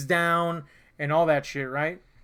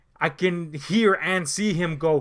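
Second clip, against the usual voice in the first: ordinary delivery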